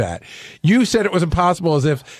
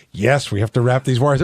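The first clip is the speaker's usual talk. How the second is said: a little sarcastic, joking tone; 5 semitones lower than usual. Retelling another speaker's reply about wiring, imitating a sarcastic reply. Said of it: "being a little sarcastic".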